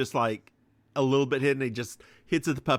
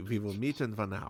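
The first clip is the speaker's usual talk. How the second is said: low, soft, put-on German accent; 5 semitones lower, 8 dB quieter than usual. Voicing an old man character meant to be German, in a German accent. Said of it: "Sells my German accent".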